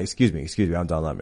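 totally serious, earnest, pushy delivery. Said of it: "dead serious".

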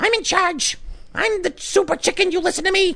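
bossy, sassy hen voice, pitched way up. Voicing the head hen talking to the other chickens, sassy Karen chicken voice. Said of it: "that sounds like a Karen chicken".

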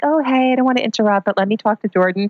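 put-on sweet, flowing grandmotherly voice. Retelling what the grandmother says when she comes in: imitating grandma, sweet and flowy. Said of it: "your grandma's all sweet and flowy".

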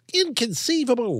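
put-on lisping nasal voice. Showing a favourite impression, Wallace Shawn from The Princess Bride. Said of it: "Wallace Shawn from The Princess Bride".

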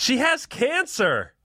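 cheery, jovial shouted blurt, very high-pitched. Telling a story from a Chicago comedy club, retelling her friend's jovial yell. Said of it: "Her friend, jovially, yells like".

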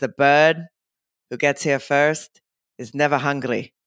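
clumsy, bad, put-on Greek accent. Retelling what George said to the speaker, in George's bad Greek accent. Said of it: "this is my bad Greek accent".

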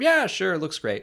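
loud, high put-on approving tone. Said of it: "And he's like".

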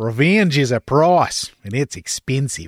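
put-on slightly bogan, broad Australian accent. Saying a line the way Daz does, in Daz's Australian accent impression. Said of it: "with his Australian accent".

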